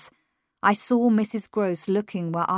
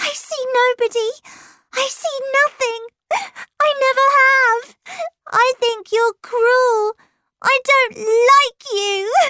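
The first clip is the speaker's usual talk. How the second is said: very high, shrill, loud shrieking scream; 7 dB louder than usual. Narrator reading Flora's reply to the narrator, screaming. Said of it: "she screamed".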